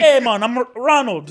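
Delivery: Bahamian-accented voice. Speaker introducing a character called Bahamian guy: put-on Bahamian accent. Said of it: "It's called Bahamian guy".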